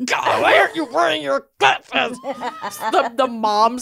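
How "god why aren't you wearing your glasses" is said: mock angry scream through gritted teeth, higher. Retelling a mom in the car after her kid's missing glasses: imitating a mom's gritted-teeth scream. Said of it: "the gritted teeth mom scream".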